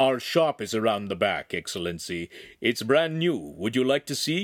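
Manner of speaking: ordinary talk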